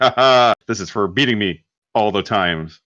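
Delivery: ordinary delivery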